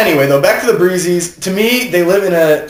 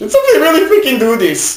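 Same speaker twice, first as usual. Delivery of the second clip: put-on sing-song Norwegian accent throughout; 8 semitones higher than usual. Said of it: "Norwegian accent to say".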